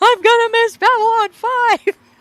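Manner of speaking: very high, loud, stretched-out screaming. Retelling someone's reaction when the power went out: imitating someone screaming.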